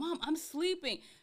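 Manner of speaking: irritated, fed-up, annoyed tone. Retelling waking up to cabinets slamming, telling mom: imitating own annoyed complaint. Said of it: "one time I got so annoyed".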